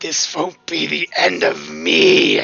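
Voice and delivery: slow, rough, raspy, menacing villain voice. Voicing a dying Witch Queen who grabs a character's hair: cackling Witch Queen voice. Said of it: "grab Helena by the fucking hair and go".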